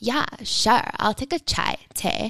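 annoying, irritating put-on valley girl voice. Re-enact accepting a drink in the kitchen, a running joke between you two, in an annoying valley girl voice. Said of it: "our most annoying valley girl voice".

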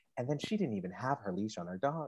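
calmest possible, very soft and hushed delivery. Speaker contrasts their own yelling with the listener's story, mimicking a calm telling. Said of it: "presenting it in the calmest fashion possible".

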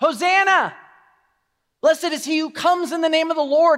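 high, loud screaming crowd shout. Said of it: "the people are screaming out".

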